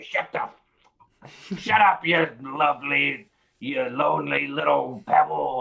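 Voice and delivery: deliberate, loud, slow, angry, scolding snap. Retelling to a friend how he would smack a talking object and snap at it to be quiet. mock-angry snapping. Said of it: "smack him and say".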